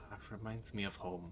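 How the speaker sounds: very quiet, hushed half-whisper muttered under the breath. Voicing him as the others walk away, half-whispering under his breath. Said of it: "you can hear him whisper, like kind of under his breath".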